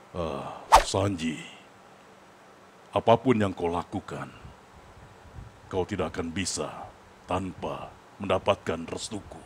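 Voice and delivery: slow, heavy, deep-set character voice. Speaker imitates someone who usually speaks in a heavy voice, imitating a heavy, deep voice. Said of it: "suara berat sih dia biasanya".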